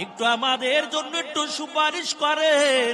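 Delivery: desperate, high, loud pleading call.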